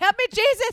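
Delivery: high, loud, terrified cry, scared out of his wits. Retelling how a startled man in the hallway cried out, imitating a scared cry. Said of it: "He's just scared so bad".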